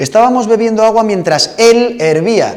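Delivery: "él" strongly stressed and lifted high in pitch.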